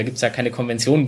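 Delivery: plain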